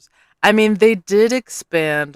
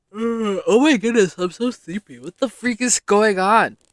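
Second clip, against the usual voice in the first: yawn in the voice, higher; 4 semitones higher than usual. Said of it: "Excuse the yawn".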